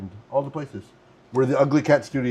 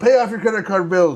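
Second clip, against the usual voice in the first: loud, high-pitched yell, hollering outward; 8 semitones higher, 7 dB louder than usual. Recounting a man walking around the station yelling, retelling a man yelling. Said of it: "he was just walking around yelling".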